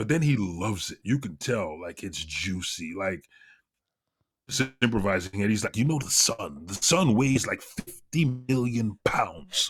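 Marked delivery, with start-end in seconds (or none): 5.8-9.7 eager, enthusiastic science-explainer voice. Describing how a science explainer talks: Neil deGrasse Tyson voice. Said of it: "you just did the voice so well".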